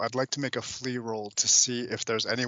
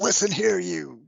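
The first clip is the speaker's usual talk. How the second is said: harsh drill-sergeant voice, higher; 8 semitones higher, 4 dB louder than usual. Playing a character who suddenly confronts pirates: hard drill sergeant manner. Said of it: "uncharacteristically h-, hard drill sergeant demeanor".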